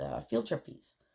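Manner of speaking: ordinary talk, nothing marked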